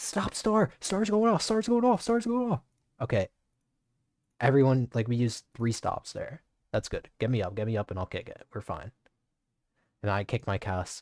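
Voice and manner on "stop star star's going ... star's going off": very high callout, yelled over and over. Recapping a game fight, reenacting calls to everyone: retelling own yell. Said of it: "But I'm like yelling".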